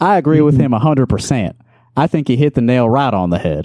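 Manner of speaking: folksy country lawyer delivery. Reading out a quoted remark, done in a country lawyer voice. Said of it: "I could do sort of like a country lawyer type of thing".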